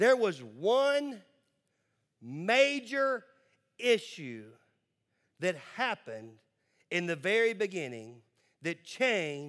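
slow, deliberate, drawn-out emphasis. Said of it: "listen to these words very clear, carefully".

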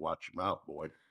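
ordinary delivery

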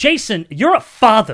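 long, high, drawn-out yell. Retelling being blinded by a stage light: imitating own yell. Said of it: "I yelled".

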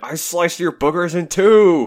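very high, loud, really upset yelling. Describing a favorite manga panel, the speaker quotes the character, imitating Zoro yelling upset. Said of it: "Zoro really upset yelling".

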